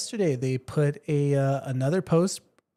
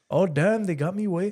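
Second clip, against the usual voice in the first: clumsy, badly put-on Spanish accent; 4 semitones higher than usual.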